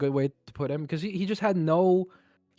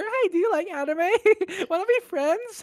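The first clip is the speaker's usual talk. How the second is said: cutest tiny voice, very high and quick. Speaker retells what a guy unexpectedly said, in the cutest, high-pitched voice. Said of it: "the cutest, most high voice ever".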